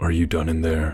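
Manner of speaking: plain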